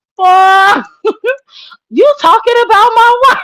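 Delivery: very high voice, acted, laughing through the words, tickled. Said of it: "he was so tickled".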